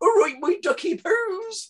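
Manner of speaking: very high Bristol-style cartoon nanny voice. Recalling being asked for Count Duckula voices, the speaker does Nanny from Count Duckula voice. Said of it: "that's a great voice for people in Bristol".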